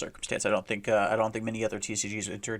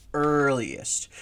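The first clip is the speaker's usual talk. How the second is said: "earliest" set apart and hit hard. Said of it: "I wanna put extra emphasis on the word earliest".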